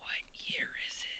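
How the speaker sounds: hushed whisper under the breath. Asking a fellow party member in the game a question: whispering in character. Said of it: "I whisper to Zandak".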